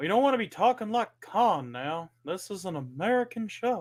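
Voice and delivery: put-on Texan accent, laid on thick. Joking on the show to Tony, in a Texan accent. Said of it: "You're doing that Texan accent".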